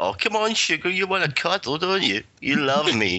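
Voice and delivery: put-on camp voice, flirting, sweet come-on tone. Retelling how he answers players who use a slur, camp voice. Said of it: "I just start coming on to them in a camp voice".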